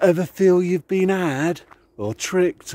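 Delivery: poor Cockney accent.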